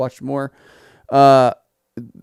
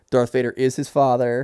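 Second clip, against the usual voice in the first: ordinary delivery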